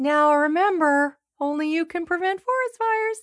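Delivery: very high-pitched put-on bear voice. Speaker talking about the forest fires ad, doing a Smokey Bear voice. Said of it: "That's a bear voice".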